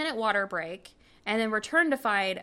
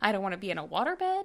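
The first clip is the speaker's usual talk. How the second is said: ordinary talk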